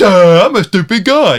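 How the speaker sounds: very slow, loud, mocking dim-witted man voice. Imitating an audiobook narrator voicing a male character: mocking dumb man's voice. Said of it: "It's almost like that's what she's saying".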